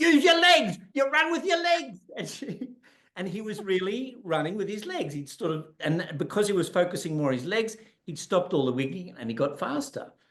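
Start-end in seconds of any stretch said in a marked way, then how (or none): 0.0-2.0 very high, shrill, raised hollering scream. Retelling a woman coaching a boy to run, imitating her screaming at him. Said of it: "she's screaming at him".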